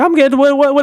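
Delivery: mock stunned, disbelieving, high, freaked-out screaming. Retelling seeing forty thousand views on a clip: retelling own screaming. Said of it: "I'm, like, screaming".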